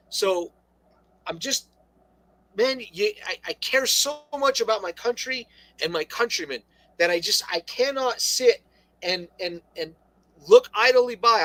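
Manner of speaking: stammering, stuttering, tripping over and repeating words. Talking with another person in a conversation, stuttering. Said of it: "I'm stuttering".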